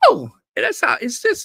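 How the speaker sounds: highest possible top-of-the-range voice, rattled off. Commenting on someone's new low, in the highest voice you can manage. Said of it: "I got to say it with the highest voice I can".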